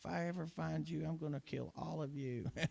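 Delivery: put-on very high, enraged, furious old lady voice. Recalling childhood prank calls to an old lady, quoting her: imitating her angry threat. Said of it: "she got so mad".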